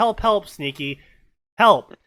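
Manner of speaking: mock shouting. Retelling her example of drowning in a pool, imitating her shouting for help. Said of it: "and I'm shouting".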